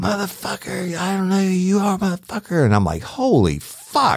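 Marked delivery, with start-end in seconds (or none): 0.0-2.6 mock, very high-pitched screaming, shrieking and hollering. Retelling a woman running out with a shotgun; imitating her screaming and hollering. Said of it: "she's screaming and hollering".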